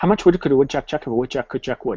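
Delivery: rattled off very fast at speed, still clear. Tongue-twister speed practice while keeping control: very fast but clear. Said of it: "I'm going to say it very fast".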